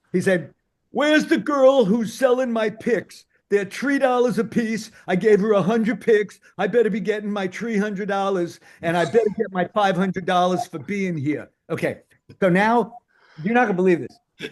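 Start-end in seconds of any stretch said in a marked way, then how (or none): 0.9-11.5 put-on Brooklyn-flavoured street talk accent. Retelling what a man putting on powder said before the gig, very loud Brooklyn accent. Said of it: "he talks very loud in the Brooklyn accent".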